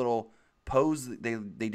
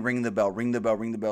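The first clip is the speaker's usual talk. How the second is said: ordinary delivery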